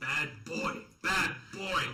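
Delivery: loud, furious, repeated raging screams. Playing a raging character, screaming at a foe: screaming in a rage. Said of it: "I keep screaming".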